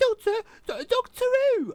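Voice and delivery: very high, stammering voice. Mocking a companion's mother for stammering the show's title: imitating Jackie. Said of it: "Jackie going".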